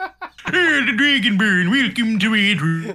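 high, cartoonish, put-on Swedish cook accent. Speaker retells muted game dialogue being voiced, in a Swedish Chef voice. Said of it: "Balgrove turned into the Swedish chef".

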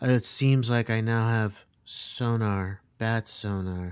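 low flat deadpan monotone, sonar drawn out. Retelling what he said while still in that mode, imitating a flat monotone. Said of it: "just like monotone".

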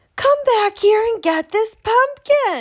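very high, loud, shrill, swooping hollering yell. [name] calls after the truck driver who dropped the pumpkin, yelled. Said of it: "she yelled".

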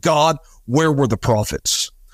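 restrained, held-back outcry like a scream. Retelling how a man screamed at god at the tv: imitating someone screaming. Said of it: "he screamed at".

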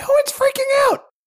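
squeaky, very high-pitched, insistent voice. Warned about freaking out again, insisting no one is: high-pitched voice. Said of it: "Then why is your voice so high?".

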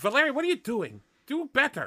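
yelling in a very high, shrill, swooping voice. Reacting to another player's character getting shot: yelling. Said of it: "Why are you yelling at me to do better?".

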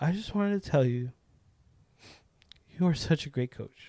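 mock voice, deliberately cracking and breaking. Retelling a woman thanking the speaker for being a great coach, imitating a cracking voice. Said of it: "and her voice starts cracking".

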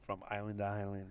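deep, soft, hushed put-on seductive murmur. Repeating advice for another speaker who asked for a sexy voice: put-on sexy voice. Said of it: "say it in a sexy voice".

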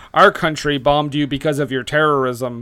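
ordinary delivery

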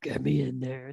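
put-on, dropped, very deep, hushed, soft voice. Telling someone how to say it in an audio file, put-on deep voice. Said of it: "you have to say it in that deep voice".

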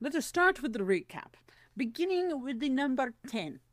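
theatrical, spooky Halloween-flavoured puppet voice. Starting a recap of a ranked list: Count from Sesame Street voice. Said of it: "I just turned into, like, count right there from Sesame Street".

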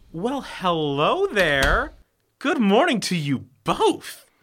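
sarcastic tone. In a scene about a missing diamond, a character greets the two being held: sarcastic. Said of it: "Now is not the time for being sarcastic".

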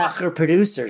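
ordinary delivery

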